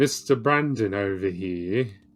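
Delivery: put-on British accent. Discussing how the word mister is used, a speaker says it in a british accent. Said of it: "even apply the British accent to it".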